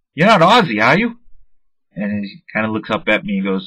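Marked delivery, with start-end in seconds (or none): 0.2-1.2 put-on teasing, playful, raised, joking tone. Speaker retelling what he said to a baseball player signing his cards, retelling a joking remark. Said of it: "I said jokingly to him".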